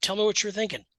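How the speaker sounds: friendly, real jovial, easy tone. Retelling asking someone to explain their thinking: imitating own jovial tone. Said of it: "I've gotta say it in a real jovial way".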